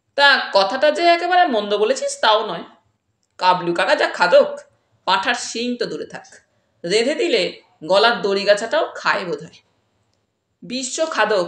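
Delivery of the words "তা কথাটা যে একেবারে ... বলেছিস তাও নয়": usual speaking voice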